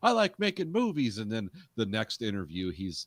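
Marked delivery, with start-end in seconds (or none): 0.0-1.2 put-on high, loud New York Italian accent. Imitating a director in a plain interview: New York Italian accent. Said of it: "he sounds like an Italian guy from New York".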